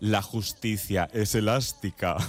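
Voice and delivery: low, wicked villain voice. Quoting a TV series line recalled during an interview, as a mock-evil Concha Velasco character. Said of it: "decía así con voz de muy mala, malísima".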